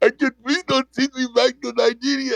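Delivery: high, sobbing, crying, pleading voice. The speaker retells what a crying man said in a video, imitating a crying plea. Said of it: "Like that crying dude said".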